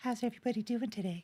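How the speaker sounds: very high-pitched feminine tone. Imagining David greeting everyone: imitating David's high feminine voice. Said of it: "I could for real hear David being like".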